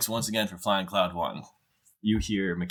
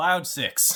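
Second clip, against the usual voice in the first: airline pre-flight announcer voice. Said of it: "you get a pre-flight announcement".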